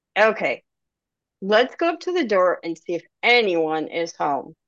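ordinary delivery

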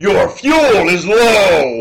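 very slow video game narrator voice. Retelling a friend's car suddenly talking at night: Gauntlet narrator voice. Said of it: "the narrator of Gauntlet go".

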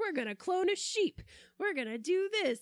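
excited, giddy mock scientist voice, high and loud.

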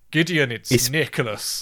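put-on thick German accent. Retelling a film scene, Santa Claus greets Gideon in a thick German accent. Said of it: "Like this thick German accent".

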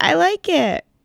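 squeaky, very high-pitched voice. Recounting a father's reaction to a new hairstyle, imitating dad's high-pitched voice. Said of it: "his voice got really high pitched".

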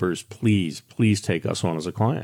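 put-on pleading tone. Retelling how a man's wife pleaded to be taken on as a client, imitating her pleading. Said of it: "she was pleading like".

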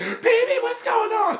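very high-pitched, slow, drawn-out calling-out yell. Retelling a movie scene where the wife yells down the phone: imitating the wife yelling. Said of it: "she's just yelling".

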